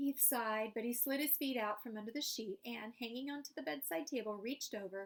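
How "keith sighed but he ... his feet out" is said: usual speaking voice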